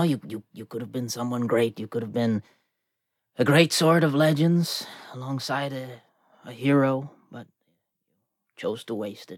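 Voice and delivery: quiet mutter under the breath. A character mutters at a defeated animated sword, under his breath. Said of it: "Just under his breath".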